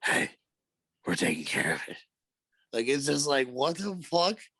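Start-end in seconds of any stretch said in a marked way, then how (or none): 0.0-2.0 hushed, put-on stage whisper. Act out the man whispering during a talk between two people, imitating his whispering. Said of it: "The whispering, he's like".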